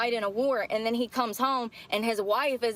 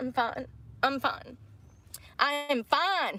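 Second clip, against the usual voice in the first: tearful crying voice, very slow and drawn out; 3 semitones higher than usual. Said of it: "I don't know why I'm crying".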